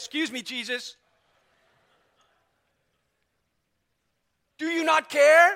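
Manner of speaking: storming, very loud, high-pitched indignant outburst. Retelling how Martha storms in and interrupts Jesus: acting out an angry interruption. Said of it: "Martha storms in and says".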